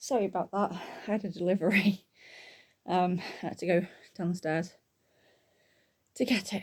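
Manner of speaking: breathless, out-of-breath voice. Returning after going downstairs to get a delivery: out of breath. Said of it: "so a bit out of breath now".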